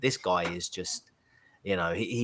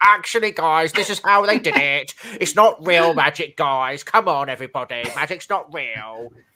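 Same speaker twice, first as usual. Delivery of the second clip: high, blaring, belted-out puppet voice; 8 semitones higher, 11 dB louder than usual. Acting out the type of guy who debunks a magic show, Zippy voice. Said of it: "You sound like Zippy".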